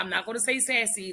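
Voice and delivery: ordinary talk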